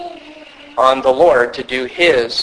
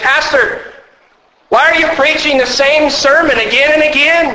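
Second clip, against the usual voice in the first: much higher, confrontational, demanding tone. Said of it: "they confront the pastor and say".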